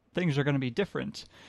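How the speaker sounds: ordinary talk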